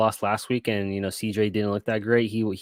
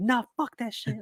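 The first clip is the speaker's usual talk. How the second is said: put-on shrill brush-off yell, pitched way up; 13 semitones higher, 5 dB quieter than usual. Retelling his reply to Katie during a stressful game: imitating his own yelling. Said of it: "and it's more like I'm yelling".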